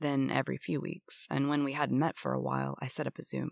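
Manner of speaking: plain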